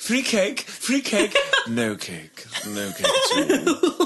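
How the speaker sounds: very high, swooping, sing-song English accent. Podcast hosts riff on a cake bit before the show intro, english accent. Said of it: "Do it with an English accent".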